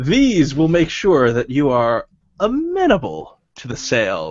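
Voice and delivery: contemptuous, sneering delivery with swooping pitch. Reading a story aloud, a character reveals beetles in clay pots; sneering. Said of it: "he sneers".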